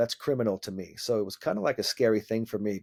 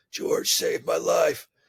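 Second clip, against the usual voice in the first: raspy, slow voice, pitched up; 7 semitones higher than usual. Retelling meeting Michael Jordan, the speaker quotes him in Michael Jordan's raspy voice. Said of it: "in his raspy voice".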